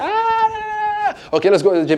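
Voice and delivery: put-on giggly girl voice. Acting out a girl's reply after being playfully thrown on the bed: imitating a giggling girl. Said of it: "and she's giggling".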